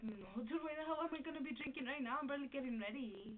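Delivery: ordinary talk, nothing marked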